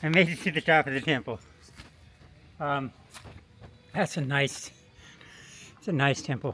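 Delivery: slightly breathless, a little winded, out of breath. Addressing the guys after climbing the temple stairs, a little winded. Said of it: "a little winded of the stairs".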